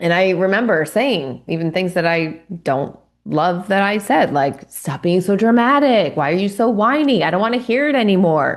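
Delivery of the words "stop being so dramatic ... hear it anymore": play-acted impatient, dismissive, irritated tone. Retelling own irritated words while parenting: imitating own dismissive tone. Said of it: "just being really dismissive".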